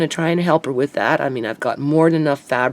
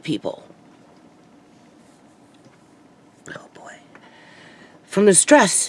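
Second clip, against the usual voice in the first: voice breaking with tears, higher; 4 semitones higher than usual. Talking about stress over the landlady and housemates: starting to cry. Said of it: "I'm starting to cry already".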